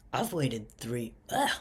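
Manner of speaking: breaking voice cracking mid-phrase. Speaking about companies that let them down, speaker's voice cracking. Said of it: "voice crack".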